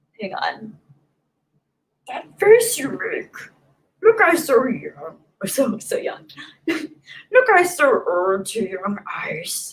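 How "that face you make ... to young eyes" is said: swooping, sing-song, sage-sounding creature voice. Streaming after thanking a viewer for a super chat, trying a Yoda impression. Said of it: "I can usually do Yoda".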